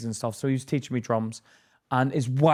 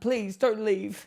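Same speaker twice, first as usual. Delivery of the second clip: mock crying voice, pitched higher; 9 semitones higher than usual. Retelling how the drum teacher begged them to stay: imitating someone crying. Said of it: "he started crying".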